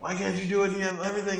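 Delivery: very high, shrill, bellowing yell. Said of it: "He's yelling at the engineers".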